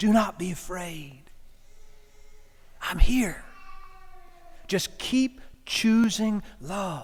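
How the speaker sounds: slow, drawn-out, fully voiced stage whisper. Voicing the Good Shepherd speaking into the ear in crisis: half-whispering.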